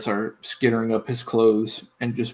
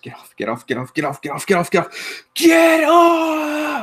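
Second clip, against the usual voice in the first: very high, loud, shrill, swooping yell; 6 dB louder than usual. A character on his knees tries to fling rats off his hands, yelling. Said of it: "And he yells out".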